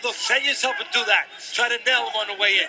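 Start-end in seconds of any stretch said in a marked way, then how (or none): none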